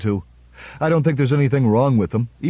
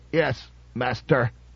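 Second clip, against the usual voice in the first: soft, harsh, grating, squawking robot voice; 5 dB quieter than usual. The monster answers Powell's question, in a harsh, squawking robot voice. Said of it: "in a harsh, squawking voice, like that of a medieval phonograph".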